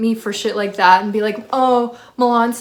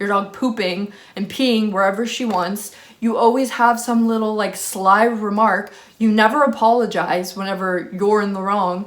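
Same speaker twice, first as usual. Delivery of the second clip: ordinary delivery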